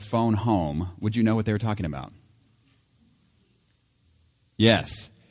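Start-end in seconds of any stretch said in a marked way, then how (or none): none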